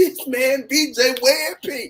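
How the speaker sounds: high, drawn-out put-on hollering yell. Retelling what someone on the block shouted about a pink shirt: imitating someone yelling. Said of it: "I remember he yelled out".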